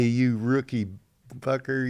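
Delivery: play-acted jeering heckling, imitated screaming. Retelling how players yelled at a rookie pitcher: imitating players screaming. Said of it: "they're screaming at me".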